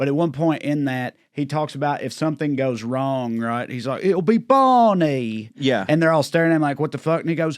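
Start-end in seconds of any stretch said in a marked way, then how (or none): 4.0-5.5 bad, clumsy, put-on Cockney accent. Quoting a film character to another person, in Don Cheadle's bad Ocean's Eleven accent. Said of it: "a very famously bad accent".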